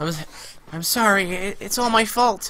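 put-on bad high-pitched girl voice. Voicing the girl's line in a game, do a bad girl voice. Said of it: "You can be the girl".

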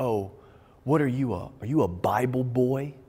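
mock scornful, slow, disdainful, sneering. Retelling how a guy from an old crowd mocked him: imitating a disdainful taunt. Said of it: "this disdain in his face".

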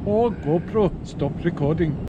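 put-on Indian accent. Waiting for the fish, the speaker tries out an Indian accent on the GoPro. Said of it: "we've got an Indian, worked out really well".

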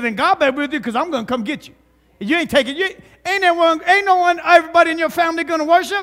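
mocking, sarcastic tone. Retelling a scripture scene's reply in his own words: imitating a sarcastic reply. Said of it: "he was being sarcastic".

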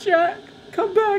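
overdone, loud, very high fake sobbing. Recalling watching Titanic with friends as teenagers; mock sobbing.

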